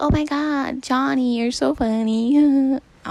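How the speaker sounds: very loud, high, put-on squeaky girly voice. Showing how he thought girls had to sound, squeaky girly voice. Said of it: "that was my attempt at a girly voice".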